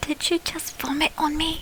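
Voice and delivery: very quiet whisper, barely audible. Speaking in character while sneaking in a cart: whispering in character. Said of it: "I'm gonna whisper".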